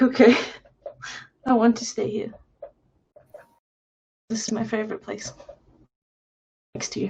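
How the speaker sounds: tearful speech, crying through the words. Voicing Bella tearfully asking to stay next to her partner: speaking while crying. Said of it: "She's crying now".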